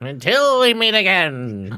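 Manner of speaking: strange, weird, otherworldly, very high wraith voice. Recalling a wraith met in a cave: Mormesk the Wraith's weird voice. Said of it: "That weird thing with the weird voice".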